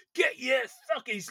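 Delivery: put-on yell. Recounting a scene, the speaker acts out one man yelling at another: retelling a shout. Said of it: "as he's shouting at him".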